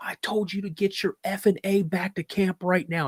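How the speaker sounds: furious, acted-out fatherly voice. Retelling a story about his dad, imitating an angry dad. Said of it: "And he's like pissed".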